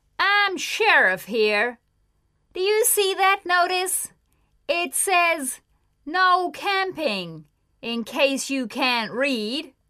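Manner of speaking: furious, angry, high-pitched yelling. A sheriff confronts a group of campers, shouting. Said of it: "he shouted".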